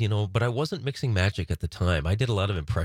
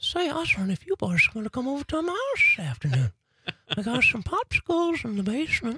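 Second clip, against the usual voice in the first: creepy cartoon voice, much higher. Recalling the creepiest cartoon voice ever, doing the Herbert the Pervert voice. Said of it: "the creepiest voice on cartoons".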